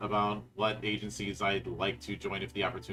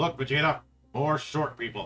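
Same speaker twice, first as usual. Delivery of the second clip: put-on gruff henchman voice; 4 semitones higher than usual. Joking about walking into a panel together: Nappa voice. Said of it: "me pulling a Nappa voice going".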